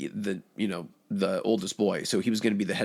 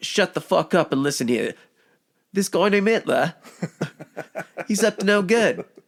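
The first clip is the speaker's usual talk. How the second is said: fake Cockney accent, higher and louder; 10 semitones higher, 6 dB louder than usual. Joking about addressing a crowd in a put-on Cockney accent. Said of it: "a Cockney accent".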